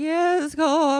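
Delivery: put-on shaken voice. Retelling answering their son after an upsetting incident, imitating a shaken voice. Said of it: "My voice is like this".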